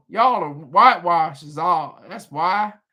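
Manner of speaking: terrible, bad put-on Texas accent. Repeating someone's remark, terrible Texas accent. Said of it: "That's my terrible accent".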